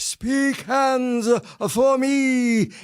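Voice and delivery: very high, slow, theatrical delivery, "me" stretched out. Retelling a line spoken on stage during a play: best Gielgud voice. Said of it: "in my best, uh, Gielgud voice".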